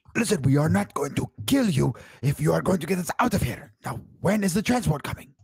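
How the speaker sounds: high-pitched shouting. Voicing a character yelling at a captive gunman: yelling in character. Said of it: "I'm gonna yell at him one more time".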